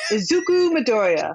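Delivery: big, dramatic announcer voice. Introducing the protagonist of an anime episode: announcer voice. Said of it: "I have to use my announcer voice".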